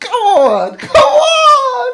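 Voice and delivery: thrilled, very high-pitched, very slow and drawn out. Reacting to a mission video with another speaker: very excited. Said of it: "I'm so excited".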